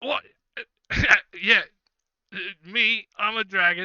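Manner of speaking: put-on very loud, high-pitched, sloshed drunken ship-captain voice. The captain, half in the bag, hears a dragon is coming: drunk captain voice. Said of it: "It looks like he's kind of half in the bag right now, / He is currently using a dagger to clean out his toenails. He's got his boots off, and he's got his feet kicked up on a table, just on a barrel".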